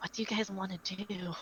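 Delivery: soft, hushed half-whisper. Voicing a character who asks the others what they want: half-whispering.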